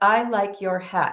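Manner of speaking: level monotone, flat, with no inflection. Retelling the words they said in that moment, with no inflection. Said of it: "with no inflection".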